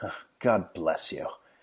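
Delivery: mock-smug grinning delivery. Retelling what a man said after a transaction, mock-smug grinning delivery. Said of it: "looks at me with this like shit-eating grin and goes".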